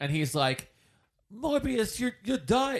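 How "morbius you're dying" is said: little put-on British accent, pitched up. Retelling the antagonist showing up at the lab: little British Doctor Who accent. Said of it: "in his little British Doctor Who accent".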